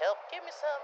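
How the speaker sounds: squeaky, very high little voice. Voicing his bones crying out for Red Bull, in a very high-pitched voice. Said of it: "they have a very high-pitched voice".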